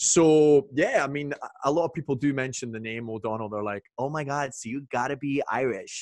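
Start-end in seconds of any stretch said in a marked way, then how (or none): 4.0-6.0 put-on American voice, accent on. Retelling how Americans react to the name [name], in a put-on American accent. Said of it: "was that your American accent?".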